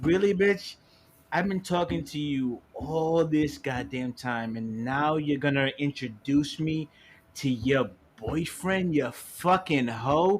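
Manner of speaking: put-on slow, rude, insulting, disrespectful drunken ranting. Retelling what a friend said he told a girl: imitating a disrespectful drunk rant. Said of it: "you got real disrespectful and shit".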